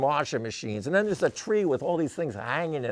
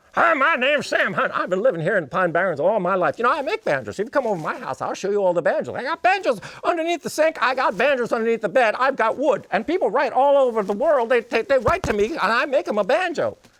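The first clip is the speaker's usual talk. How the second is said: very high, loud, fast, furious rattled-off patter; 9 semitones higher, 7 dB louder than usual. Retelling how a smiling old man spoke, imitating Sam Hunt's fast talk. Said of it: "This guy talked fast and furious".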